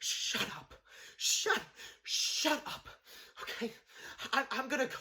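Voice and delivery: slow, angry lashing out, stumbling over words. Recapping a scene where Gina lashes out at her boss, imitating Gina lashing out. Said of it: "she's kind of like lashing out at her boss".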